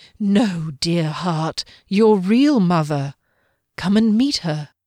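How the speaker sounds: low, soft, soothing, persuasive, coaxing whisper. A guardian answers a dazed woman's question, low soothing whisper.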